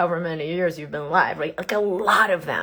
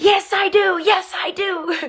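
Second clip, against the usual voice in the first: very high, very slow, drawn-out yell; 13 semitones higher, 4 dB louder than usual. Retelling riding down a steep trail: imitating own shouting. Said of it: "shouting my way down".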